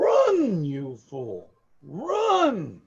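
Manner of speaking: loud, swooping deity-voice scream, stretched out. The game master voices the player's deity after a roll, screaming deity voice. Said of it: "It screams into your head".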